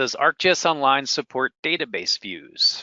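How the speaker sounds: plain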